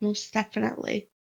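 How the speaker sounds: hushed whisper. Player character replying to a companion's whispered order, whispering. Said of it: "I'll whisper back".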